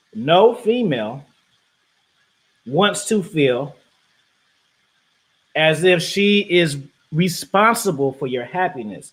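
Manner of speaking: slow-motion, very drawn-out, deliberate delivery. Making a point to the audience, saying it in slow motion. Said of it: "Let me say this in slow motion".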